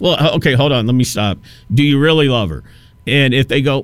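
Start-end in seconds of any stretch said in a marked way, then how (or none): none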